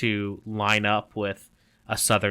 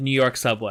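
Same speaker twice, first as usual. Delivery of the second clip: ordinary talk, nothing marked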